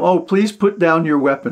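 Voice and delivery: ordinary talk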